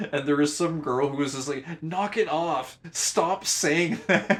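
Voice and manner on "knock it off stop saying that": play-acted really mad, high-pitched, slow, angry tone. Retelling how a girl in class told the speaker to stop: imitating an angry girl. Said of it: "got really mad at me".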